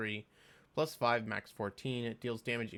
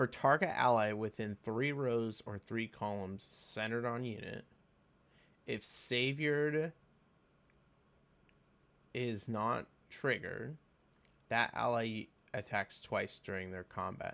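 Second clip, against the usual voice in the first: careful, slow, deliberate word-by-word reading. Rereading a game skill description aloud to check it, reading more slowly. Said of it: "let me read this slower".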